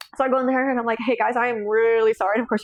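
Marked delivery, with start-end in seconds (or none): 1.1-2.4 imitated crying voice. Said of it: "you can tell I'm crying".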